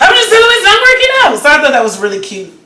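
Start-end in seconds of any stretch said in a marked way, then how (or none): 0.0-1.4 high, loud, fast, rattled-off fed-up voice. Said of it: "she was fed up".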